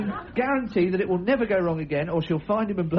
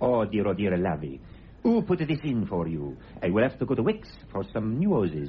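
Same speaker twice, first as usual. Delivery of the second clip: comic put-on, very low Spanish accent; 10 semitones lower than usual. A repairman who only speaks English, fixing a washing machine, silly Spanish accent. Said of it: "the repairman will only speak English, but in a silly Spanish accent".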